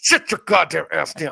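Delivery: mock hissing through clenched teeth. Retelling how mom scolded the kids, imitating a hiss through gritted teeth. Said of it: "say it to her teeth".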